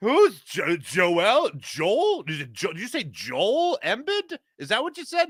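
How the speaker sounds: high, swooping, faux-clueless stumbling double-takes, acted out. Acting out how a conversation went, playing a man acting like he never heard of him. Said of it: "I'm just going to act it out for you... Like he never heard of him".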